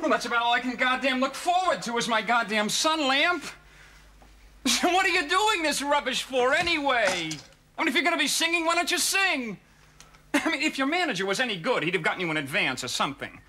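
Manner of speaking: exasperated. Complaining that a sun lamp is broken, fed up. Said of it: "I'm fed up".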